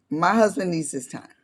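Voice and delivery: ordinary talk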